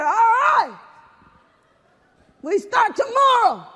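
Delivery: put-on excited yelling. Retelling a sergeant recruiting in a hallway: imitating an enthusiastic yell. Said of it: "Why are we yelling?".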